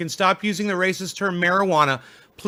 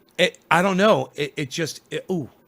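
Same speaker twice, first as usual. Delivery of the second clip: normal talking voice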